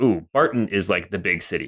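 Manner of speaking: ordinary talk, nothing marked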